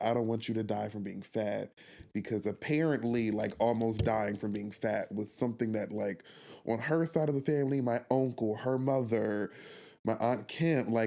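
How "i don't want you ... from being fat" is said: put-on tearful, crying voice. Retelling a mother's words after a punishment: imitating mom crying. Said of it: "she started, like, crying".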